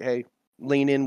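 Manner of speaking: ordinary talk, nothing marked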